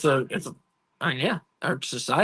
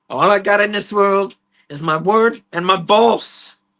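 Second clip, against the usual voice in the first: bad Cuban accent, belted very loud and high; 6 semitones higher, 8 dB louder than usual. Quoting a line from the film, in a terrible Scarface accent. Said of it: "that accent sounds pretty terrible".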